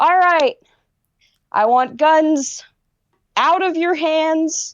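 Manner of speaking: commanding shout. A character with revolver drawn orders people in the cockpit: shouting. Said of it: "he just kind of shouts".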